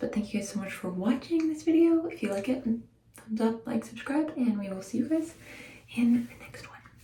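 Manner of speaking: soft, light, hushed half-whisper. Ending a home blowout video while the speaker's babies sleep: half-whispering. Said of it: "why I'm whispering".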